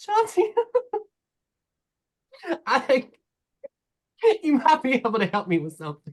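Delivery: speaking through helpless laughter. Narrating a story, a character who can't stop laughing speaks to chauncey, laughing while talking. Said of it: "through this laughter, he's he smells Chauncey's cupcakes and he says".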